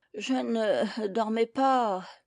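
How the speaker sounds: faint, weak, husky, hoarse, very drawn out. Reading a story, the Dormouse just woken, weak hoarse voice. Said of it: "d'une voix faible et enrouée".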